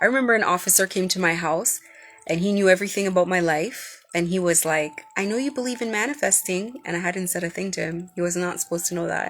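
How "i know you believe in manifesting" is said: play-acted condescending, sneering, mocking, pitched up. Retelling what an officer said at the house: imitating a condescending tone. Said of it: "in such a condescending way".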